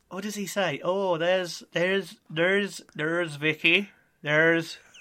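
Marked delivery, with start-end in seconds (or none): 0.8-3.9 put-on Northern Irish accent, slower. Urged to have another go, the speaker quotes a man in a Northern Irish accent. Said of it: "That's more Northern Irish".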